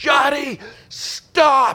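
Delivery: loud high yell. Retelling calling out to Johnny from too far away in a crowd: retelling a loud yell. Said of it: "I use my outdoor voice, and I yelled".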